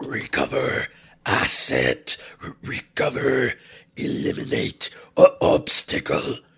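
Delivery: loud hellish growl, stuttering and glitching like machinery. Narrating a story as a hellish voice pours forth: growling, glitching machine voice. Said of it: "The growling voice of hell poured forth, glitching like a machine".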